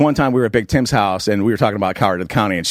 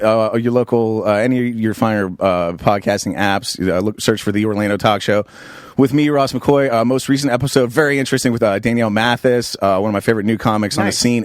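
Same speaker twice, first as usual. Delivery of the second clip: ordinary talk, nothing marked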